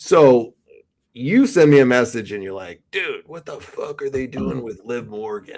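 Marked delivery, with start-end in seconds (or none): 2.9-5.6 hushed, over-the-top, exaggerated evil villain voice. Reading a co-host's text message back to him: villain voice. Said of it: "made the villain voice worse".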